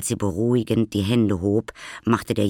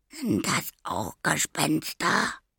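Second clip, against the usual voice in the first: timid, fearful, frightened half-whisper, high pitch; 7 semitones higher, 5 dB quieter than usual. A little boy, told not to wake a girl's parents, asks her, fearful half-whisper. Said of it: "flüsterte der Kleine ängstlich".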